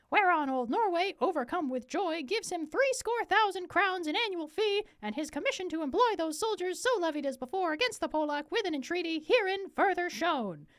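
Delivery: high-pitched little cartoon mouse voice. Reading a king's ambassador aloud after being told any voice: Mickey Mouse voice. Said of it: "that Mickey Mouse voice".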